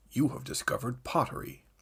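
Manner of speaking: soft, hushed, breathy put-on narrator voice. Recalling a game narrator's line, doing a Leonard Nimoy impression. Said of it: "That felt like a pretty solid Nimoy".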